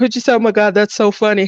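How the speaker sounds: talking through laughter. Telling another speaker a funny story: laughing while talking. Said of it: "Sorry, I'm laughing".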